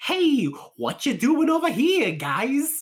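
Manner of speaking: exaggerated, very high, loud, swooping cartoon Jersey accent. Discussing jersey accent stereotypes with another speaker, doing an exaggerated jersey accent. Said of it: "unless it's like".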